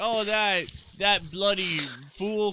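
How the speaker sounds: put-on clumsy Scottish accent. Retelling what a man from Scotland said about Star Trek's Scotty: bad Scottish accent. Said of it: "I can't do a Scottish accent".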